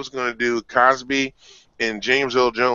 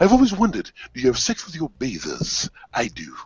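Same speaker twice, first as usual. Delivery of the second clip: put-on deep, grand movie-king voice. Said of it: "James Earl Jones, Coming to America, different voice".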